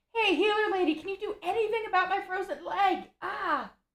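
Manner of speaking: very high, cried-out voice. A player voices their character calling to the healer lady, crying out. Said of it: "is going to cry out".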